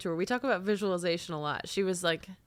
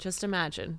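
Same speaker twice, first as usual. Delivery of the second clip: usual speaking voice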